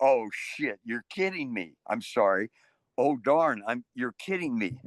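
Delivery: ordinary talk, nothing marked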